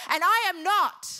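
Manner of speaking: booming, deliberate, very loud, drawn-out shout. Urging listeners to bring their needs to God, yelling. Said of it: "Sorry for yelling".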